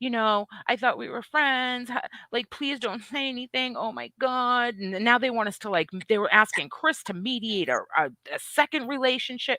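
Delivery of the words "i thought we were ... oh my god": mock begging and pleading. Retelling a couple's messages in the inboxes: imitating begging and pleading. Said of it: "begging and pleading".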